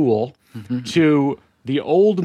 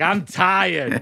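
put-on little Boston kid voice, toddler-like; 4 semitones higher than usual. Imitating a toddler saying they're tired, in a Boston accent. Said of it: "all toddlers have a Boston accent. They're like".

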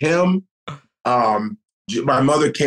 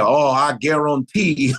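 put-on New Orleans Cajun accent, cooking-show host style. Recalling a cooking figure from growing up, Cajun Chef impression.

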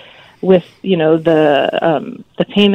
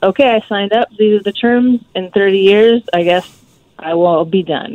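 usual speaking voice

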